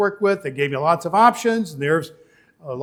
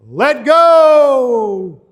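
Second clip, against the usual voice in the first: big booming voice with drawn-out "go"; 6 semitones higher, 9 dB louder than usual. Telling a story, the voice from above answers the man, in a big booming voice. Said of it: "this big booming voice came down".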